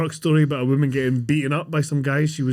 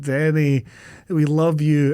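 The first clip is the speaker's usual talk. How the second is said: usual speaking voice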